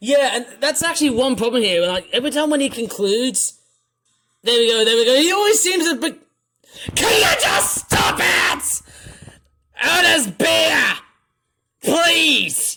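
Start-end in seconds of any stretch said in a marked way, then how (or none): 6.9-12.8 very slow, high, desperate pleading yell. Begging Otis to stop it, acted pleading shout. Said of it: "sorry, but that was just, uh, voice acting".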